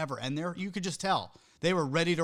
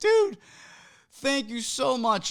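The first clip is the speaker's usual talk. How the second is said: loud, high, drawn-out scream; 8 semitones higher, 6 dB louder than usual. Retelling thanking someone from the stage: imitating own screaming. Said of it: "Screaming at this guy".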